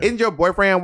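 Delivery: put-on Texas accent. Retelling what a woman asked about a boyfriend, imitating her texas accent. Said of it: "I can't do her accent".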